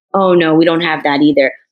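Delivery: ordinary delivery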